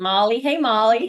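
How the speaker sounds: put-on over-the-top American accent, high and loud. Teasing the other speaker about how they said a country's name: really American accent. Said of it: "in a really American accent".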